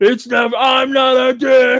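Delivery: mock scream, high, stretched out and slow. Retelling a scene where an actor screams his line: imitating someone screaming. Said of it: "he yells, he screams it".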